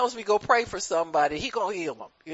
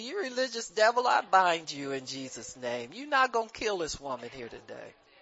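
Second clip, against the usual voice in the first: hushed mutter under the breath; 3 semitones lower, 6 dB quieter than usual. Retelling a rebuke said under the breath at a bedside: retelling a muttered line. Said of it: "So under my breath".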